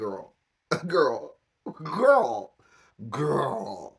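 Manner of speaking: put-on laughing, disbelieving girl voice.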